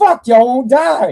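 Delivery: shrill, very high, very loud, furious pissed-off yell. Retelling how a killer reacted to victims that wouldn't die: imitating someone angry. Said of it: "He got pissed".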